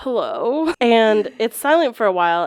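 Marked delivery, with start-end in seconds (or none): 0.0-0.7 startled, caught-off-guard, surprised voice. Retelling answering the call, as someone getting water poured on them. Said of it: "the person who gets water poured on them".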